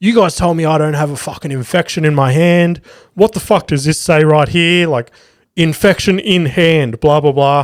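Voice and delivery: furious, out-of-control screaming and shouting rant. Speaker retells a man confronting a nurse; retelling a man losing it. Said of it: "And he's losing it".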